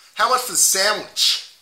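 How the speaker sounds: loud put-on Boston accent. Playing a customer asking the price of a sandwich, in a Boston accent. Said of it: "If I was to say Boston accent".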